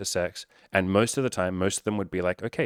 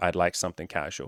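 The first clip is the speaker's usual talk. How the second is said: ordinary delivery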